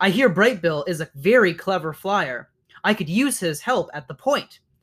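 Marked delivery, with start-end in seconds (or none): none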